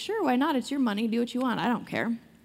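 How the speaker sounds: put-on flippant king voice, careless and dismissive. Retelling how King Xerxes answered Haman's request: imitating a flippant king. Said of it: "real flippant about it".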